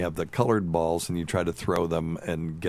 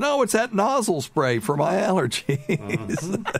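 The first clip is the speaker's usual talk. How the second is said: put-on very high, slow, folksy older woman voice. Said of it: "she said".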